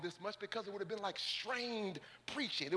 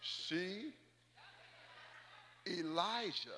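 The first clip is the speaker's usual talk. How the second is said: slow, deliberate, word-by-word delivery; 2 semitones lower, 4 dB quieter than usual. Repeating a point for listeners who missed it again, said slowly. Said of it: "Let me say it slow".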